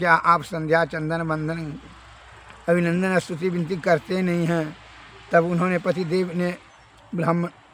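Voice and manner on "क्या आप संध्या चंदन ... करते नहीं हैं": usual speaking voice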